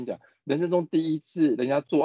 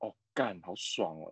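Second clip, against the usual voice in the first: very low, soft, hushed deep murmur; 8 semitones lower, 13 dB quieter than usual. Demonstrating how a phrase sounds said in a low, deep voice. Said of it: "如果用很低沉声说".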